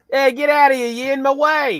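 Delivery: terrible, shrill, loud, high put-on New York accent. Joking about new york being different from chicago: terrible new york accent. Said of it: "It's terrible New York accent".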